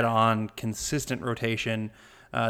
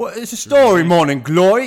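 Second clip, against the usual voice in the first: very loud, high-pitched put-on Cockney accent; 7 semitones higher, 11 dB louder than usual. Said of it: "You think I can talk Cockney the rest of the episode".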